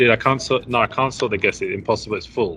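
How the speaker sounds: usual speaking voice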